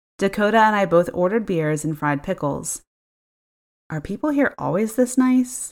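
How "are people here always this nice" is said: suspicious whisper, higher. Narrator reads a woman's line in a booth after the man who seated them leaves, whispered suspiciously. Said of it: "Dakota whispered suspiciously".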